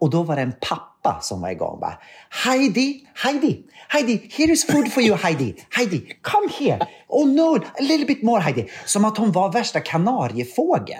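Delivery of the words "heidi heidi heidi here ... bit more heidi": put-on very high, shrill, frantic hysterical shouting. Retelling a dad at a restaurant calling after his child, imitating a dad shouting. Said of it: "skrek efter henne".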